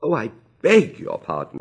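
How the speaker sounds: high, slow exclamation of great dismay. After an accident, she speaks up, exclaiming in great dismay. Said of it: "she exclaimed in a tone of great dismay".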